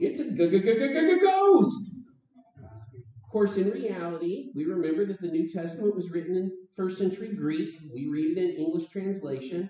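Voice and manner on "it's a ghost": very shrill, very high, very loud cartoon voice. Confessing how he always hears the disciples when reading the story: cartoon voice. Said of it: "in a kind of a cartoon voice going".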